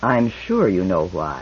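hushed, deep, soft, low and deliberately slow delivery. The speaker presses a trader who has just shaken his head, softly spoken. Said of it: "then said softly".

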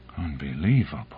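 hushed, low half-whisper under the breath. Reading a man's reaction after hearing an explanation, half-whispered to himself. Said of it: "whispered Morrison to himself".

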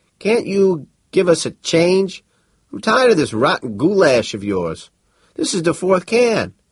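very high, faltering, broken, halting words. Narrator reads a character's complaint spoken in Galactic, halting and stumbling. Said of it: "he spoke stumblingly in Galactic".

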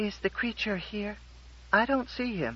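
thin-sounding, hesitant voice. In the story, a visiting woman speaks up in a thin voice. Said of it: "said in a thin voice".

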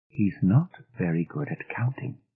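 softly spoken. Narrating Miss Fellows answering a question about Timmy, said quietly. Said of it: "Miss Fellows said quietly".

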